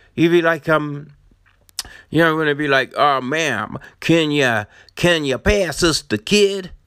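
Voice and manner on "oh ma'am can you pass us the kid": put-on San Francisco way of talking, much slower. Imagining how they ask a ma'am to pass the kid, imitating San Francisco talk. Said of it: "that's how they talk in San Francisco".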